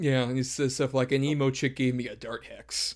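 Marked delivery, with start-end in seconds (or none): none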